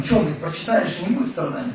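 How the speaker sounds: normal talking voice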